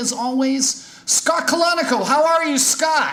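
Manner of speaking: screaming it out.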